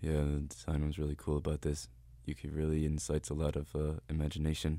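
flat, level, unvaried droning monotone. Describing a man who talks about movie posters, imitating his monotone delivery. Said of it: "he's very monotonous".

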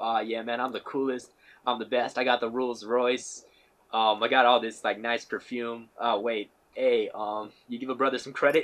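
ordinary talk

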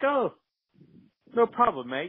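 put-on small, little, very high-pitched British accent voice. Retelling a man's reply to a request for engine help, imitating a little British voice. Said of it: "in this little British voice that he has".

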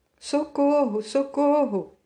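high, desperate, pleading cry. A terrified crowd at the defences calls to those approaching: crying out for help. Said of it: "Conclamavam infelizes".

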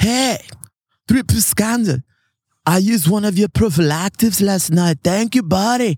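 put-on vaguely Swedish accent. Retelling someone thanking the band at one of their shows, in a possibly Swedish accent. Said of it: "I don't know if that's a Swedish accent".

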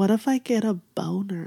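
put-on dead-serious delivery. Retelling what a man being photographed asked: imitating a dead-serious question. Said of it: "with the most serious face".

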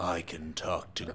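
put-on low, dropped, deep character voice. Answering whether the character can talk to ghosts: deep voice. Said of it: "now he can do deep voice".

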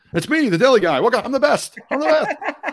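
very high, loud, boastful showman voice. Doing an impersonation of the Deli Guy who is coming up. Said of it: "There's my impersonation".

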